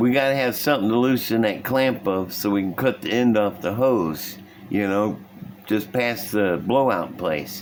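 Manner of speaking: usual speaking voice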